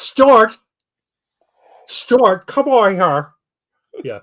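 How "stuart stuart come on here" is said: severe, drawn-out put-on North Dakota accent, high. Imitating the mom calling for Stuart, imitating the mom's Midwest accent. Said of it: "the Midwest accent".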